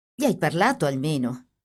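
ordinary delivery

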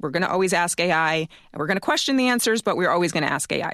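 ordinary delivery

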